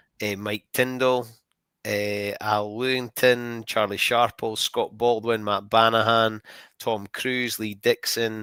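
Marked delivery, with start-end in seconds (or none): none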